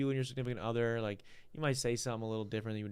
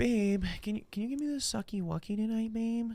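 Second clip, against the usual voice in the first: mock baby talk, higher; 11 semitones higher, 4 dB louder than usual. Retelling what a friend's significant other said: imitating baby talk. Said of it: "baby talking".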